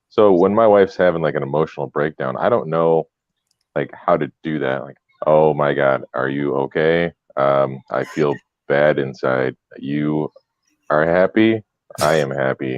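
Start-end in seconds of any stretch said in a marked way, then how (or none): 5.3-12.8 emotionless, very slow, flat deadpan monotone. Speaker acting out comforting their wife during a breakdown, flat monotone. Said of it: "or is it just the monotone?".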